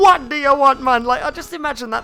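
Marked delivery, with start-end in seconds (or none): 0.0-1.0 put-on Jamaican accent, raised voice. Imagining how a Jamaican person would say the line: Jamaican accent. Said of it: "I just imagine a Jamaican person saying".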